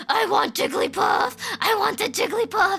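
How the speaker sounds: menacing, insistent, high, scary demanding voice. Retelling a cousin demanding a jigglypuff toy: imitating a scary cousin. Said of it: "I've never been so scared of her before".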